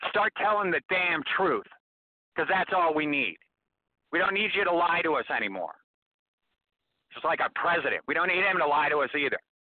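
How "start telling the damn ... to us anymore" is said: angry voice, getting higher. Repeating the demand in case not everyone heard, getting mad. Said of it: "Sorry, I'm getting mad".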